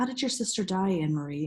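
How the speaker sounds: usual speaking voice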